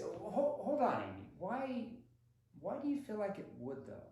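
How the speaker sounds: unconvinced, skeptical, probing, doubting tone. Demonstrating an NEPQ probing question to Amy, asked skeptically. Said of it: "See my tonality there? My skepticism?".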